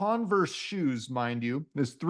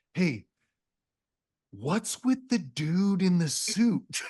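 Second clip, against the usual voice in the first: mock whispering; 2 semitones higher than usual. Retelling what the Toyota guys asked about the suit: imitating someone whispering. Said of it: "but they're whispering".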